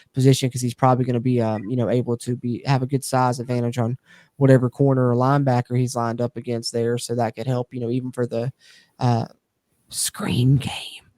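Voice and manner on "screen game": hushed, secretive whispered aside. Discussing a player's use in the slot, whispering the phrase. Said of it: "I got to whisper it".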